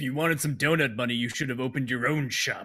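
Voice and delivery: menacing, taunting villain voice, intercom-filtered sound. Glitcher answers a demand for donut money over the intercom, menacing Glitcher over intercom. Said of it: "Glitcher says menacingly over the intercom".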